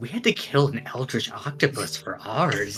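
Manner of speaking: hushed, quiet half-whisper off to the side. A character leans over to another character, quiet half-whisper. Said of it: "just kind of just quietly whispers".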